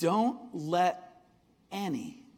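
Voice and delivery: slow, deliberate reading with long pauses between phrases.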